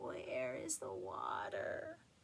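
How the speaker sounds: small, raspy, very low rasping voice. Reading a story, the narrator voices the chicken asking the astonished frogs: small, raspy voice. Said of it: "said in a small, raspy voice".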